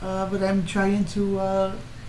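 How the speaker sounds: stage Irish accent with slowed phrases.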